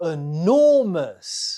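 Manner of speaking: enormous with stress on second syllable. Giving the answer in a pronunciation quiz, stress on second syllable of enormous. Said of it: "The stress is on the second syllable".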